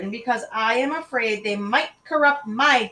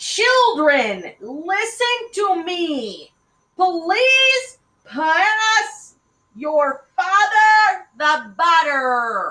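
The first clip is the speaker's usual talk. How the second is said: high, raised, artificial, unnatural-sounding voice; 7 semitones higher, 5 dB louder than usual. Narrator reads a mother speaking to her children, in a high, unnatural voice. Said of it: "She said in a high, unnatural voice".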